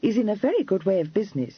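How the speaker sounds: ordinary delivery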